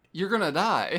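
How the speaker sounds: high, loud exasperated yell. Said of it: "I'm like".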